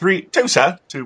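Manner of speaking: put-on light, slight British accent, pitched way up. Talking about Catwoman, doing a little Monty Python moment, slight British accent. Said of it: "I even did a little British accent on there".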